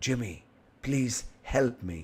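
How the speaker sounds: put-on whisper. Retelling a caller's words who was speaking in whispers: imitating someone whispering. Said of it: "a lady who was speaking in whispers".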